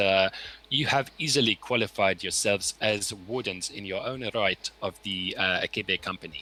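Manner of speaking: normal talking voice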